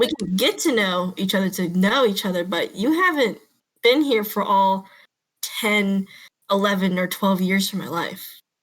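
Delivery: ordinary talk, nothing marked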